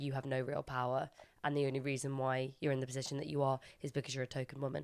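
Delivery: ordinary delivery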